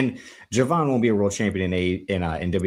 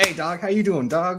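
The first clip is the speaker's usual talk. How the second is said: put-on West Coast accent, pitched higher; 11 semitones higher than usual. Retelling what Jon Bernthal did: Jon Bernthal impression. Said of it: "he did the".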